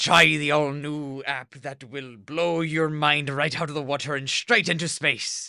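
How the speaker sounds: put-on pirate voice. Redoing an audition ad read after being asked: pirate voice. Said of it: "we can try it like I'm a pirate".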